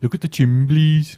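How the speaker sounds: terrible put-on Birmingham accent, loud and high. Podcast co-host, pushed to do the accent, doing a terrible Birmingham accent. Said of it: "offended by my terrible impressions".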